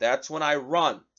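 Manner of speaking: ordinary talk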